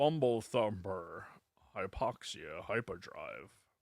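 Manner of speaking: very quiet, soft, slow voice, barely audible. Reading a listener's review name aloud: Sean Connery voice. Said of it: "Maybe if I read it in Connery".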